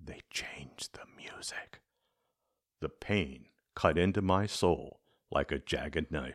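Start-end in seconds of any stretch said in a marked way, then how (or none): 0.0-1.8 leaned-in, hushed, secretive, barely voiced whisper. The boss checks for witnesses, leans toward the narrator, and whispers. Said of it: "leaned forward and whispered".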